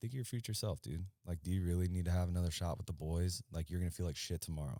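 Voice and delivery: ordinary talk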